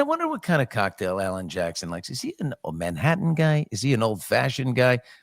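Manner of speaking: ordinary delivery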